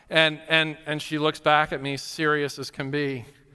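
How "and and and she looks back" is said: plain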